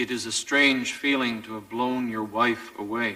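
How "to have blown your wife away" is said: ordinary talk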